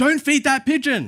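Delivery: very high, loud, rude shouting. Retelling feeding a pigeon with his wife, the speaker imitates a person's rude yell. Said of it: "in a yelling, loud, very rude voice".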